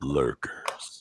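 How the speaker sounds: deep, low whispered voice. Joining others in saying one word for fun: low voice. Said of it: "let's go for a low voice".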